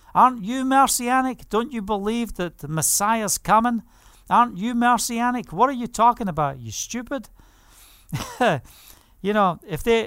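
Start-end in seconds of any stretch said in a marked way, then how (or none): 0.1-7.2 mock, mild, half-shouted argumentative tone. Retelling being screamed at in the streets and shouting back, retelling a shout. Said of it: "I'm shouting back at them".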